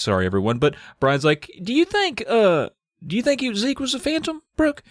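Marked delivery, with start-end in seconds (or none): 1.6-4.7 put-on very high, squeaky, hesitant child voice. Retelling the new kid asking Brooke about Zeke: Brian voice. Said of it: "this is my Brian voice suddenly".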